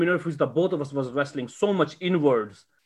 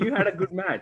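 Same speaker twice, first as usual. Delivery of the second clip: mock irritated, annoyed, pissed-off tone; 3 semitones higher, 3 dB quieter than usual. Retelling how the other wrestler spoke: imitating an annoyed compliment. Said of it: "pissed off at me".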